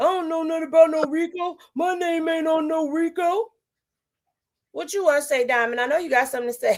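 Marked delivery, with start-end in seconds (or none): 0.0-3.4 play-acted, insistent, protesting hollering. Retelling how a man denied the RICO charges, imitating someone hollering. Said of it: "was hollering".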